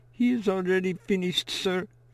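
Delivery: tiny, small voice, very high. A boy answers an older student in the cold, in a small voice. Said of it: "He says in a small voice".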